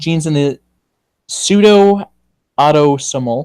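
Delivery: "pseudo-autosomal" said slowly, each syllable placed with care. Speaker reading a text aloud, saying a hard English term slowly. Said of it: "I have to say that slowly".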